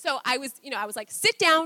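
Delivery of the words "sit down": a little escalated, louder and stern. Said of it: "a little bit escalated".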